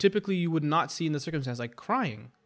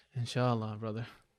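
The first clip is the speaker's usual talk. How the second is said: fake, hollow, insincere, brushing-off tone; 5 semitones lower, 4 dB quieter than usual. Describing a fake inshallah, then saying one: put-on insincere inshallah. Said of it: "It sounds like one of those fake inshallahs. Like".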